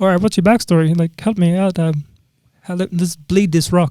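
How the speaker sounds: high frog puppet voice. Retelling what the show's producers asked a contestant: Kermit voice. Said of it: "That's a really good Kermit".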